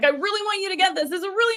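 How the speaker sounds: urgent, pressing emphasis, loud and rushed. Demonstrating the loud side of a contrast in delivery, in a loud, urgent voice. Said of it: "the loud part would be urgency".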